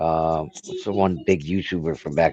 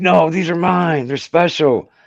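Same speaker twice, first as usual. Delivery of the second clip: put-on upset voice, higher and louder; 11 semitones higher, 5 dB louder than usual. Retelling a five-minute verbal fight: imitating an upset friend. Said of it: "And he got upset with me".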